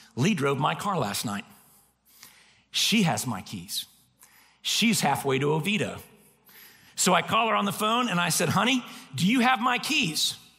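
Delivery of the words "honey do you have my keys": annoyed, irritated, put-out, pitched-up voice. Retelling a phone call asking her for the car keys: retelling an irritated tone. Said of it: "there's irritation in my voice".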